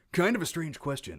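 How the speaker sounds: ridiculous put-on radio announcer voice. Speaker about to read out a question, in radio announcer voice. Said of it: "I'll use my radio voice".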